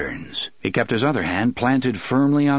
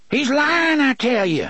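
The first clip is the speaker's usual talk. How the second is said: very high-pitched exclamation, crying out; 13 semitones higher than usual. Narrating a story, voice a man backing away toward a wall, crying out. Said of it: "Gasher cried".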